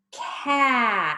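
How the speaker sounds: unhurried, drawn-out blend of cat sounds. Teacher blending sounds into a word for learners, saying it a little faster. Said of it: "Let's say it a little faster".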